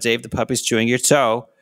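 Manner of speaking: normal talking voice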